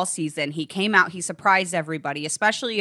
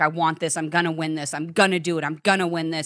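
put-on tearful voice, tearing up; 2 semitones lower than usual. Retelling a contestant's live pre-elimination confessional: imitating David tearing up. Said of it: "he started to kind of, like, tear up a little bit, and he's just like".

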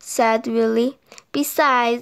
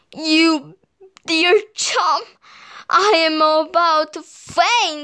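puffing, much higher pitch; 3 semitones higher than usual. A narrator reading a story voices Willy's line, puffed. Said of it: "puffed Willy".

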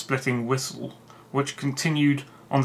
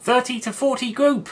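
piercing, shrill, yapping female voice, shouted; 11 semitones higher, 3 dB louder than usual. A narrator reads a woman calling out group orders, in a piercing yapping female voice. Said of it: "Yapped a piercing female voice".

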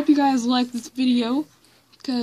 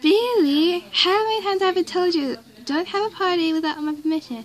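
attempted Swedish accent, pitched up; 5 semitones higher than usual. Acting out another creator's joke line, in a swedish accent. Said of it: "Hopefully I can do a Swedish accent".

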